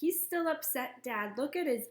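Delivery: plain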